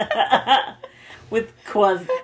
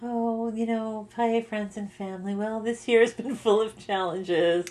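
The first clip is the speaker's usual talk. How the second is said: mock gloomy voice, quieter; 6 dB quieter than usual. Reading out a friend's gloomy Christmas newsletter: imitating a Debbie Downer newsletter. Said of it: "writes a Debbie Downer Christmas newsletter".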